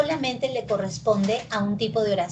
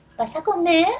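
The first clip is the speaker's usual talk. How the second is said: rising pitch at the end on "comer"; 8 semitones higher, 5 dB louder than usual. Spanish intonation lesson, example yes-no question: pitch rises on comer. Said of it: "Esto tiene entonación ascendente".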